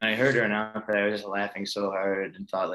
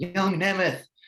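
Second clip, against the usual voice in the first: put-on scream, very high; 10 semitones higher, 3 dB louder than usual. Retelling how a wrestling figure screamed at him in training, imitating Jim Cornette screaming. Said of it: "He would scream at me".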